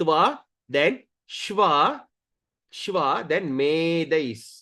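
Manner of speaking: slow, careful, each syllable drawn out.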